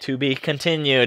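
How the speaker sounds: normal talking voice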